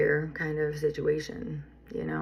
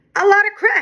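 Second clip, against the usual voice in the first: high, offhand nonchalant tone. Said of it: "he said it so, like, nonchalantly".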